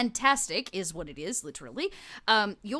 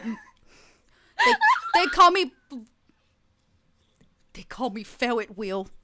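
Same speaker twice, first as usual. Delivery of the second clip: nervous stammering, higher and louder; 4 semitones higher, 6 dB louder than usual. Voicing a creature forced to reveal its true name: nervous stuttering character. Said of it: "he goes".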